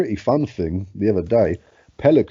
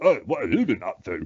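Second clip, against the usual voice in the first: put-on offhand, nonchalant, breezy pelican voice; 4 dB quieter than usual. Describing a video of a pelican, voicing it: voicing a pelican, put-on casual. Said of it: "it just looks at you casually like".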